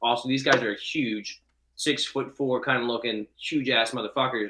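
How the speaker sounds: plain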